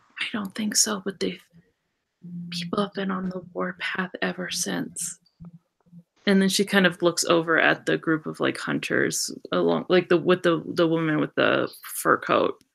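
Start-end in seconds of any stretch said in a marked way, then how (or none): 0.2-5.2 hushed, lowered, confiding voice. Game master voicing a woman who doesn't want others to hear: lowered, hushed voice. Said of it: "she lowers her voice so that like nobody can hear them".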